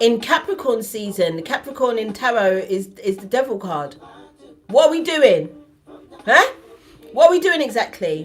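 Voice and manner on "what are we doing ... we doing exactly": loud, high-pitched shout. Addressing viewers about Capricorn season, shouting. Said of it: "I'm sorry for shouting".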